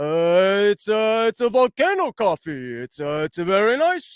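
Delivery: swooping cartoon bear character voice. Telling a story about tasting coffee, doing a Yogi Bear voice. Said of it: "I'm doing like a Yogi Bear voice".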